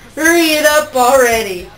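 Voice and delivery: loud yell. Someone cuts off a rehearsed introduction, shouted. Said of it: "Tai Chi shouted".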